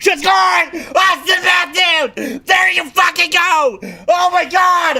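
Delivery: very high, drawn-out ecstatic yell, voice giving out. Calling an Austin Matthews goal live: excited goal shout, voice going. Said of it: "I'm losing my voice!".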